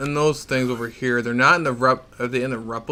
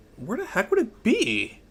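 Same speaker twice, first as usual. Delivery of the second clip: soft voice breaking and cracking up high; 7 semitones higher, 7 dB quieter than usual. Speaker wondering aloud where something is: voice cracking. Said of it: "Don't mind that voice crack".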